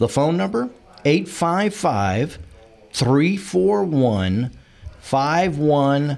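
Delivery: slow, deliberate delivery, each word spaced out separately. Giving listeners the phone number to call, saying it slowly. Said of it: "I'm saying it slowly".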